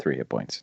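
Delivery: very dejected. Healing an unconscious ally while kneeling over a dead body: very dejected. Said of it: "sitting there very dejected".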